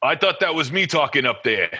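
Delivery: own, natural New York accent. Retelling what a man said when he came in; New Yorker accent. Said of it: "With that New Yorker accent".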